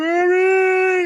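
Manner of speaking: high, stretched-out creepy calling. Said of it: "that's a good impression".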